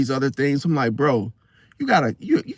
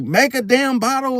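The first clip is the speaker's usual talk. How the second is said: play-acted, high, screamed delivery; 9 semitones higher than usual. Picturing a girlfriend's order to him: imitating someone screaming. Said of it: "if she's screaming at me".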